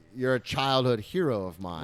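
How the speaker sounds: ordinary delivery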